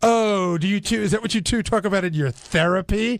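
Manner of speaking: put-on sarcasm laid on thick, dripping. Retelling a sarcastic question from an interview: imitating Jerry Seinfeld's dripping sarcasm. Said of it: "dripping sarcasm".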